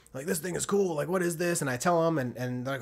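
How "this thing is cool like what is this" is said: put-on old pickup-truck guy voice. Retelling what old truck guys say on seeing the truck: stereotypical old truck guy voice. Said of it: "they got the stereotypical old truck guy voice".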